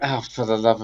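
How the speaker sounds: low, soft, exasperated muttering under the breath. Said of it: "I'm just like".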